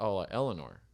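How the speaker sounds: usual speaking voice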